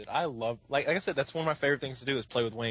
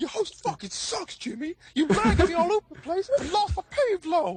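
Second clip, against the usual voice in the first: exaggerated impression, much higher gamer ranting voice. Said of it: "it almost sounds like he's exaggerating".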